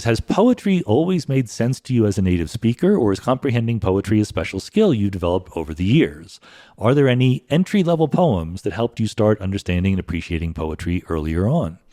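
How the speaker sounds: normal talking voice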